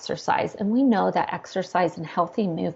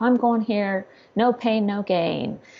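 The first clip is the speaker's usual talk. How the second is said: mean, lecturing gym-coach voice, drawn out; 2 semitones higher than usual. Imitating how people talk to themselves at the gym: imitating a mean coach voice. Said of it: "they start getting in that lecture, mean coach voice".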